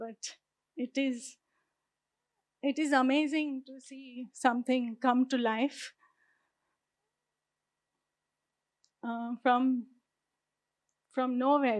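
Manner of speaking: moved, emotional speech breaking off mid-phrase. Speaker apologizes for being emotional and carries on talking, emotional. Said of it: "Sorry for being emotional".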